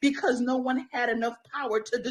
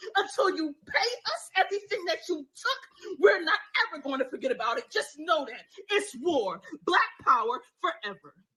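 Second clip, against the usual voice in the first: rousing, fiery preacher-style cadence; 4 semitones higher than usual. Speaker addressing listeners, in a preacher voice. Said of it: "That's why it's like the preacher voice".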